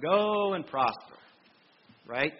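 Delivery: thick, pointed, very sarcastic tone. Retelling a reply to the king in a put-on very sarcastic tone. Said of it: "a very sarcastic tone".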